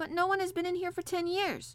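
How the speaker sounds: crying out, exclaiming, high-pitched. A boy protests to an old man who says he came before: crying out. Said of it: "cried Colin".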